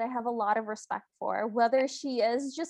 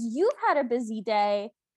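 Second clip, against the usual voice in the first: acted angry, indignant voice; 2 semitones lower than usual. Retelling a story and voicing the stepmother's reply: acting out a mad stepmother. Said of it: "the stepmother is so mad and she goes".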